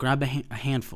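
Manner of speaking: usual speaking voice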